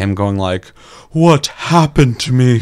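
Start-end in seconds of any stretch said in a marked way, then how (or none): 1.1-2.6 very loud, breathless, parched, dry-throated voice. Complaining about a game character's delivery, imitating a breathless, dry-throated voice. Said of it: "you sound like you've been breathing so hard that your throat's a little dry".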